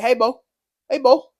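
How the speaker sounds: put-on "hey boy" in Cajun accent. Speaker recalls a saying everyone used in high school; Cajun way of saying hey boy. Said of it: "It's like a Cajun way of saying".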